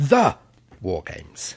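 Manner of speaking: The underlined with heavy stress. Hosts introducing their Doctor Who bit, strong stress on the. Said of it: "When you said the, you almost sounded like you underlined it".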